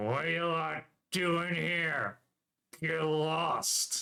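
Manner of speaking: slow words pushed through a nearly shut jaw. A narrator voices a beat-up man confronting the group, speaking through a barely open mouth. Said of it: "through a mouth that can barely open".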